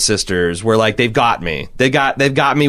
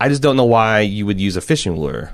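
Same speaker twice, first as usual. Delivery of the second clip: ordinary talk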